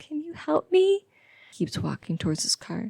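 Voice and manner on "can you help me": very high, put-on girly voice. Narrator, wrench in hand in a dark parking lot, calls to a man in the girliest tone. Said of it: "I call out in a girliest tone as I can muster".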